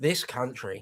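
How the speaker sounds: sarcastic voice. Quoting a catchphrase to another speaker: Alan Partridge impression. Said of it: "that's Partridge".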